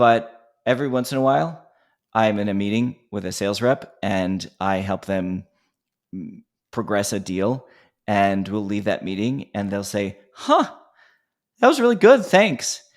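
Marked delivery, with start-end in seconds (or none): 10.3-12.8 play-acted caught-off-guard surprise, very high and raised. Retelling what a sales rep said after a meeting: imitating someone sounding surprised. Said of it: "it's the surprise in their voice".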